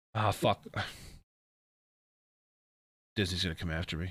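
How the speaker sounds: soft, depressed, dejected, glum, resigned tone. Right after quoting Elsa, thinking Disney will come after them: sounding depressed. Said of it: "you sound so depressed about that?".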